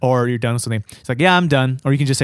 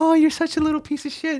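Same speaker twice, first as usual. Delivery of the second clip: put-on very high-pitched baby-talk voice. Showing how they say insults in their own way: like talking to a dog. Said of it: "It's like talking to a dog".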